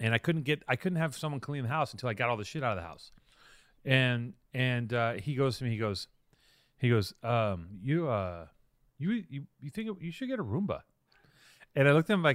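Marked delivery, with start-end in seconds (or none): 7.8-10.8 mock gentle, polite, hesitant, tiptoeing tone. Retelling what a visitor said about the dirty house: imitating a polite suggestion. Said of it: "he's very politely saying".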